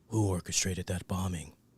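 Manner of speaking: very low, soft, hushed hero voice. Showing how Hamish sounds doing Batman in that scene, Hamish's Batman voice. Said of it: "this is how Hamish sounds when he's doing Batman".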